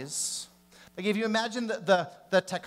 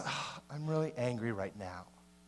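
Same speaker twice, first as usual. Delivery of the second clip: speaking lower and quieter; 7 semitones lower, 9 dB quieter than usual.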